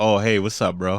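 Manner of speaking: abrupt put-on switch to friendly tone. Retelling how the other speaker's voice changed at the door: imitating a sudden voice change. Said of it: "your whole voice changed".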